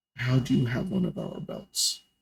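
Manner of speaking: very quiet, breathy, barely audible whisper. Voicing a figure holding a blade to a character's throat: very quiet voice. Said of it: "In a very quiet voice".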